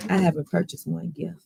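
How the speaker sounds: hushed, half-whispered aside. Speaker keeping it from their child nearby, half-whispered. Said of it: "I have to whisper that so my child doesn't hear me".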